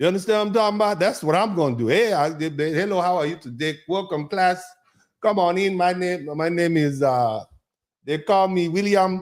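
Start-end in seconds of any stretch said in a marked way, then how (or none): 2.7-9.2 put-on Nigerian accent, welcoming fatherly voice. Acting out a class teacher at daddy school in Lagos: imitating a Nigerian teacher. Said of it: "I am the designated Nigerian father today".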